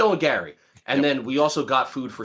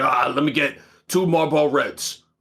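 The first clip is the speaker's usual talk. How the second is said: imitated crotchety old man voice. Retelling a customer ordering cigarettes at a bodega: imitating an old crotchety guy. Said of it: "this old crotchety guy, and he's like".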